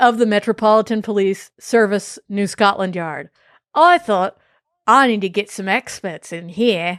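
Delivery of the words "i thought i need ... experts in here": put-on Australian accent. Reading an inspector's quote aloud in an australian accent. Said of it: "Why is he Australian?".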